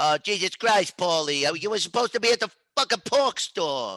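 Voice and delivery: mild, restrained scolding tone. Speaker doing a quick Sopranos riff: Tony Soprano impression yelling. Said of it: "that was Tony yelling at Paulie".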